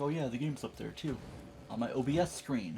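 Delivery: ordinary talk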